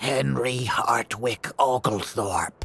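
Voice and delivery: watery, gurgling spectral ghost voice. A ghost answers the householder's complaint, in a gurgling ghost voice. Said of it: "in a gurgling voice".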